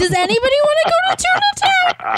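squeaky grossed-out squeal, rising. Asking the others, after a crude vampire line: high-pitched with disgust. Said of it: "I'm getting really high-pitched right now because I'm so disgusted".

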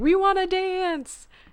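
very high, insistent, repeated crowd yell. Retelling a movie scene of a lady in a crowd, imitating a lady yelling. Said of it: "that one lady who keeps yelling".

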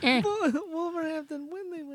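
put-on little creature voice. Asked to say it like Baby Yoda, the speaker repeats it in Baby Yoda voice. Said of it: "Say it like Baby Yoda".

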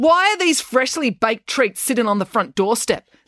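high, insistent, demanding tone. A sister turns on her brother, demanding. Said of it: "demanded April".

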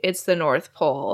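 ordinary delivery

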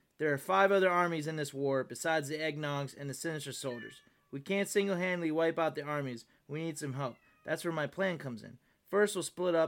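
ordinary delivery

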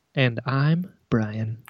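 quiet, soft-spoken, subdued, low-key voice. Introducing oneself at the start of the show, speaking quietly. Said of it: "Why are you so quiet?".

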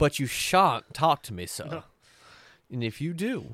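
exaggerated, overly genteel Southern gentleman accent. Voicing a character in a group scene, in an overdone southern gentleman voice. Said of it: "you're making him like way too southern gentleman".

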